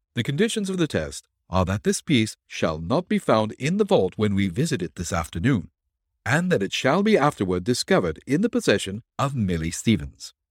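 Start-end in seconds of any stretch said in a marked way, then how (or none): none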